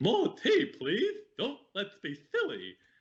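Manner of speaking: very high, sing-song voice. Talking about favourite voices to imitate, the speaker does a Mad Hatter voice. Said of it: "I really like the Mad Hatter voice".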